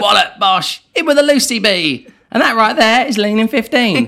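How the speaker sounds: hoarse, very high, strained, worn-out cry. Recalling the shouted catchphrase from early cooking videos: hoarse, strained voice. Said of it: "My voice is gone".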